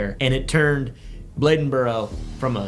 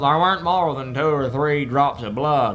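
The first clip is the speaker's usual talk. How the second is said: put-on Appalachian mountain accent. Reading a quote from an autopsy report: appalachian accent. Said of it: "That was my Appalachian impression".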